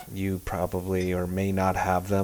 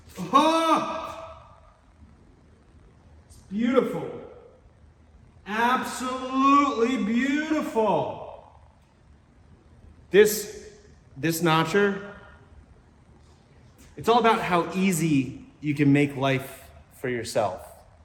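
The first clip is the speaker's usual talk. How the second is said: excited, more enthusiastic, higher pitch; 13 semitones higher than usual. Giving an honest opinion about a notcher tool in real time: more enthusiastic. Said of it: "a little bit more enthusiastically".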